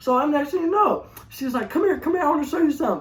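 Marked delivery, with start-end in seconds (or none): 1.7-3.0 fast, eager, all worked-up excitement. Retelling how she called him over: imitating her excited voice. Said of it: "she getting all excited".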